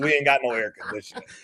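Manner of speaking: put-on elderly grandmother voice. Retelling Nana's reply to the brother: imitating his grandmother. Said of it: "He goes".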